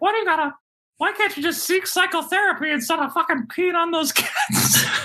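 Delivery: squeaky voice, very high pitched. Retelling what a man who now hates someone keeps saying, Mickey Mouse-like voice. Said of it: "He kind of sounds like Mickey Mouse too".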